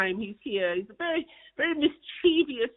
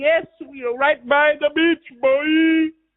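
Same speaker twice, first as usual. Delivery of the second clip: put-on Jamaican accent, loud, very slow and drawn out; 3 semitones higher, 7 dB louder than usual. Speaker retelling what a woman he met answered him, imitating a Jamaican accent. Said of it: "she sounded like she was from Jamaica".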